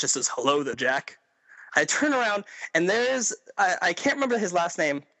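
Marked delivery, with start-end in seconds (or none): 0.3-1.2 deep, booming voice. Retelling a celebrity greeting the speaker from behind on Fifth Avenue, in Isaac's deep booming voice. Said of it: "this deep booming voice behind me".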